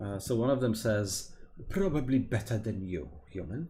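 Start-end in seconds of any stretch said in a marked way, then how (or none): 1.7-3.7 put-on thick, heavy, laid-on British accent. The game master voices a goblin answering a human, heavy British accent. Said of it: "in a heavy heavy British accent".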